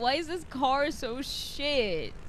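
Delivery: laughing hard, crying with laughter. A streamer driving in a game with friends, crying with laughter. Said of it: "I'm literally crying".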